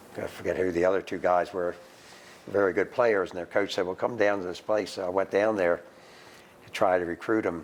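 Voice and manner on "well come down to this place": ordinary delivery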